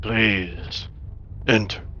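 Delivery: confident, low, soft, almost reassuring voice. A game master voices something calling out to the players: low, almost reassuring voice. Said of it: "it speaks to you kind of in a in a low voice that is almost reassuring".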